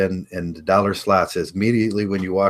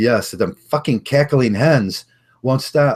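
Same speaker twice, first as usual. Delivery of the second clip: raised, pitched-up outburst; 5 semitones higher, 4 dB louder than usual. Recounting finally speaking up at a table, retelling raising his voice. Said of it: "I kind of raised my voice and I says".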